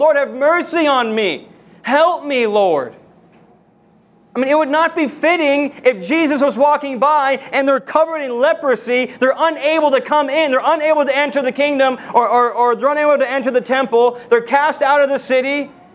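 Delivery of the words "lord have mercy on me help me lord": slow, beseeching, pleading cry. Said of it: "Crying out to the Lord".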